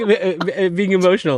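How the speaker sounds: high, loud, giggly talk. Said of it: "the only reason I'm laughing is".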